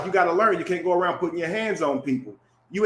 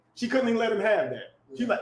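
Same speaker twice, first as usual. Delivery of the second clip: ordinary delivery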